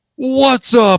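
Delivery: super loud, very high-pitched voice. Tease someone about getting so close to the microphone, imitating a super loud podcast intro. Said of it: "it gets super duper loud".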